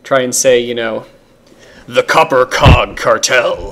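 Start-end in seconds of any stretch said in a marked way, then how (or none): 1.8-3.7 slow, menacing, threatening villain-style delivery. Advising new DMs on naming things, say a faction name in a menacing voice. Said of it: "say it in a menacing voice".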